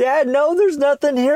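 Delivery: mock very high, tearful voice, on verge of tears. Retelling telling dad there is nothing under the tree: imitating own past crying. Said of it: "I started to break out in tears again".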